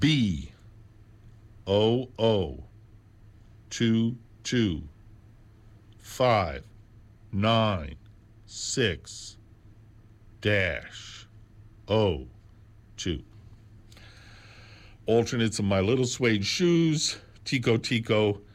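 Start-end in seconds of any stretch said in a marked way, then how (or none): 0.0-13.2 at a slow pace. Speaker repeats a catalog number for listeners, said slowly. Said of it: "I'll say it slowly this time".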